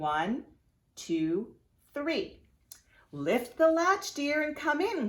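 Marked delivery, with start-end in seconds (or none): 3.1-5.1 very high put-on grandmother voice. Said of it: "called the wolf in a grandmother's voice".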